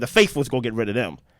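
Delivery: talking kind of fast, rushed. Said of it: "I'm talking kinda fast".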